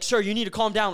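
put-on police officer's mild half-shout. Retelling how police spoke to the speaker after being jumped, imitating cops yelling. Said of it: "The cops start yelling at me".

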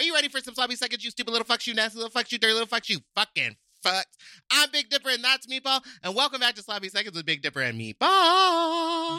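very high, fast, rattled-off speed-reader patter. Opening a podcast episode as host, in a speed-talking Trisha Paytas impression. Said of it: "You sound like the Micro Machines man".

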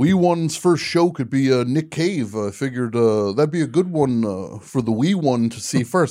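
put-on Canadian accent. Retelling a father talking at a Toronto concert: Canadian accent. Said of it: "the Canadian thing is very interesting".

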